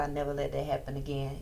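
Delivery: ordinary talk, nothing marked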